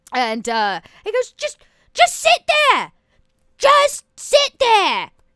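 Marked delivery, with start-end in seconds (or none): 1.4-5.1 put-on very high-pitched, strong Cockney British accent. Voicing a talking mimic chest in the corner, in a cockney british accent. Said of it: "in this kind of really, you know, Cockney British".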